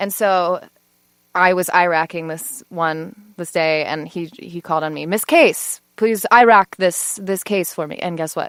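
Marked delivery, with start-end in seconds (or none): 5.1-8.0 put-on German accent, spoken slow and loud. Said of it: "that was a great accent".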